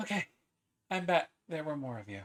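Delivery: breathless, panting. Voicing a character who just came running up: out of breath. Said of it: "She is a little out of breath".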